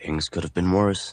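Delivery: plain reading voice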